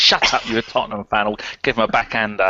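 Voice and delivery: normal talking voice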